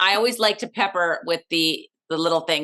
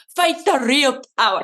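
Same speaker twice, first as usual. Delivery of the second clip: higher-pitched, bad put-on Irish accent; 6 semitones higher, 3 dB louder than usual. Quoting Sinead over a nineteen seventies Disneyland picture, terrible Irish accent. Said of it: "That was a terrible Irish accent".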